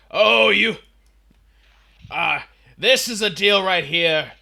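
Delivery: put-on very loud, high shouting in a New Jersey accent. Imitating a man shouting his typical line at reception: shouting in a New Jersey accent. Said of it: "in his New Jerseyite accent".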